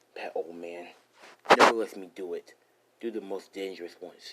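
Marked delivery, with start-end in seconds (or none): none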